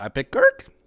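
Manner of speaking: pitch rises upward on "Kirk". Picking a default team, speaker states the choice with upward inflection on Kirk. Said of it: "with like an upward inflection".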